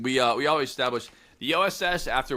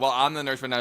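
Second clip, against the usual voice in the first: usual speaking voice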